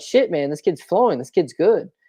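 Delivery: normal talking voice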